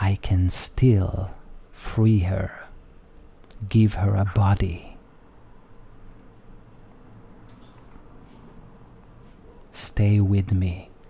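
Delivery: drawn-out, slow, hushed whisper. A figure whispers into a seated listener's ear, yet all can hear: whispering in your ear. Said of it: "And he whispers on your ear".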